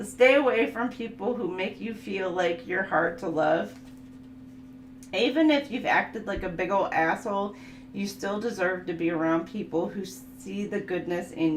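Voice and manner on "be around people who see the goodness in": normal talking voice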